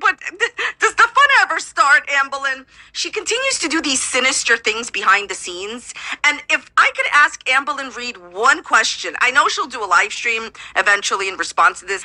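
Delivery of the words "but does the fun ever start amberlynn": words breaking into higher-pitched laughter. Talking about Amberlynn Reed, the speaker addresses her directly, laughing while talking. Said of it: "I'm sorry I'm laughing".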